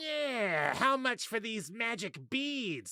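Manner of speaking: very high goblin voice with drawn-out yeah. Explaining how to voice characters in a game, demonstrating a goblin voice. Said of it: "the goblin approaches you and says".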